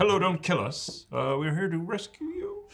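hesitant, unsure delivery with rising intonation. Acting out a greeting to a possible entity: questioning tone. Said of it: "I like the question in your voice".

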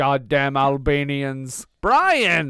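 put-on worked-up ranting. Joking about the movie character, mock agitated outburst. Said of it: "Calm down, man".

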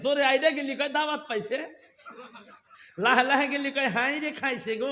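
fast, mocking, teasing tone.

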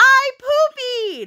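very high, thrilled, proud, excited delivery. Speaker retells Briar announcing from the restaurant bathroom, imitating Briar's excitement. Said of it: "she gets all excited".

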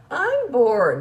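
mock snotty, drawn-out whine. Retelling what he said on coming home, imitating a whiny, snotty tone. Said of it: "that whiny, snotty tone".

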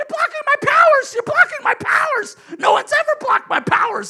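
very high, very loud top-of-the-lungs scream. Telling a story about a woman at a hot tub, retelling her screaming. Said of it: "And she's screaming".

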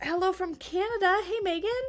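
voice gone strained. Greeting viewers from the chat while stretching: voice gone weird from stretching. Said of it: "Sorry, I'm stretching".

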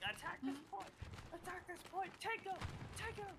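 put-on yelling. The speaker relays what squad leaders keep yelling in their ears: imitating squad leaders yelling orders. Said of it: "They're all yelling".

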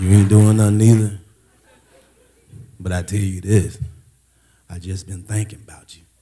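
low sweet-talk voice.

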